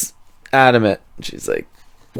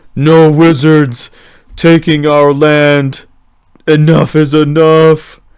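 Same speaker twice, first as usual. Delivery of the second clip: loud troll woman voice speaking through sobs; 4 semitones higher, 6 dB louder than usual. Voicing a troll woman who comes stomping out toward the group, crying. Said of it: "You can hear that she's crying".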